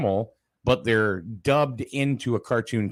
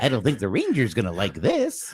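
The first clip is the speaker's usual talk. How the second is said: cracking cartoon voice with swooping pitch. Recalling an old cartoon, the speaker does Boo Boo's voice, cracking like puberty. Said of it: "he's going through puberty".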